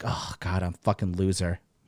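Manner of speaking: put-on sheepish, self-reproaching, ashamed tone. Acting out the thoughts that follow masturbating: acting out shame. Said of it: "moment of shame".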